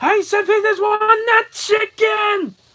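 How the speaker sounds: shrill, very high, loud screaming. Retelling what a man screamed in a foreign language, imitating someone screaming. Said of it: "he was just like screaming".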